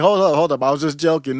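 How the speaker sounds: calm, placating, backpedaling tone. Retelling how Patrick Bet-David reacted after a joke: imitating Patrick Bet-David. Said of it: "Patrick Bet-David's like".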